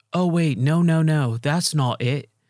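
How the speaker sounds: put-on terrible, slow British accent, drawn-out no. Describing a game character, speaker quotes him in a bad British accent. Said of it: "my British accent or whatever accent he has".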